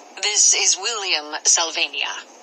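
ordinary delivery

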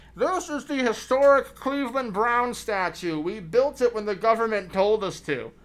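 very loud, shrill scream through a megaphone. A tour guide addresses a group in front of a statue; [name] screaming into megaphone. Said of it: "he's screaming into a megaphone insanely loud".

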